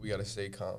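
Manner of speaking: normal talking voice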